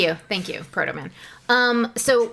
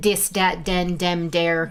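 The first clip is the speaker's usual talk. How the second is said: slow Dublin accent with th pronounced as d; 5 semitones lower than usual. Describing how his parents talk: dub accent, th said as d. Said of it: "his parents would have more of the dub accent".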